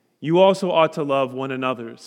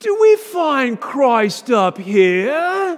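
put-on heavy British accent, very high pitch, drawn out; 12 semitones higher, 7 dB louder than usual. Retelling what a man said in class, in a thick British accent. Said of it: "in a very thick British accent".

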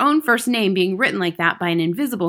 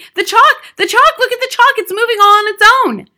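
very high, very loud, hysterical shrill scream, rushed; 14 semitones higher, 10 dB louder than usual. Someone at the other end of the room jumps up, pointing at the blackboard, screaming excitedly. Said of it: "pointing excitedly at the blackboard and screaming".

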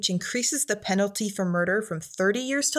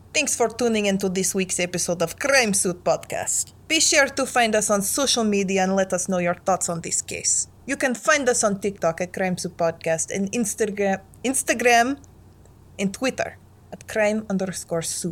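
Russian-accented delivery. Podcast host reads the episode sign-off after a co-host suggests it: Russian accent. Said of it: "You should do the sign-off in a Russian accent".

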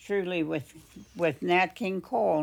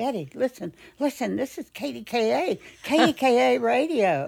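put-on excited voice, much higher pitch; 7 semitones higher, 5 dB louder than usual. Recalling a father calling Betty to listen to the radio, imitating his excitement. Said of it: "Saying so excitedly".

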